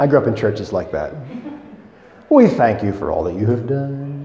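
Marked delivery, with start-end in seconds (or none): 2.3-4.2 pious, churchy prayer voice. Mimicking how people in church change their tone when praying, in a prayer voice. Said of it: "people who have prayer voices".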